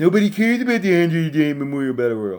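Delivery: snide, dismissive sarcasm, high and sing-song. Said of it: "my friend that said it more sarcastic".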